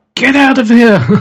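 high-pitched, loud yell.

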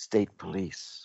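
voice dropped, hushed, under the breath. Retelling their own earlier warning to a companion, in a lowered voice. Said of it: "and I lower my voice".

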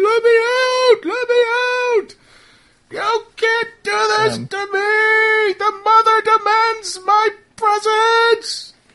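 top-of-lungs scream, very high and very slow. Voicing this guy as he begs to get out; screaming at top of lungs. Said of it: "this guy is now screaming at the top of his lungs".

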